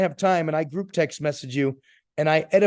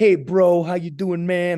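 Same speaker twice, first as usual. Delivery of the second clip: drawn-out, slow, laid-back dude-bro voice; 4 dB louder than usual. Retelling how a mentor said the speaker talked: imitating casual bro talk. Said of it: "You talk like".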